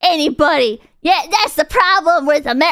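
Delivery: put-on country accent. Imitating a content creator ranting about guns: imitating a creator in country accent. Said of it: "a fucking accent, country accent for this".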